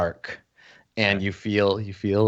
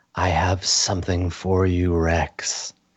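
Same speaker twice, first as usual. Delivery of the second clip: quiet, hushed voice, lower pitch; 3 semitones lower than usual. Narrating a scene, the speaker voices a mask that speaks to rex: quiet voice. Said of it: "You hear this quiet voice say".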